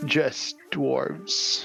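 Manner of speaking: creaky, echoey, rough talking-skull voice. Storyteller voicing a skull replying to the group, in a creaking, echoing voice. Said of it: "in a creaking, echoing voice".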